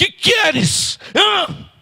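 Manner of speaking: put-on shrill, high, bright, loud call-out. Telling a story about a plane, the speaker acts out a bearded man's loud shout. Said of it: "Bem alto".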